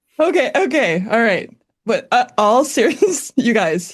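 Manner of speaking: giggling and laughing through the words. Trying to start the lesson while the co-host cracks you up: laughing while talking. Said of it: "he is just cracking me up today".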